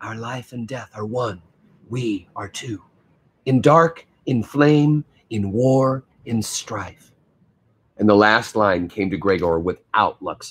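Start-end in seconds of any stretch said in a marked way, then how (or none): 0.0-7.1 whispering, much slower. A girl right behind him feeds him the words of a pledge; whispering. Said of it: "feeding him the words in a whisper".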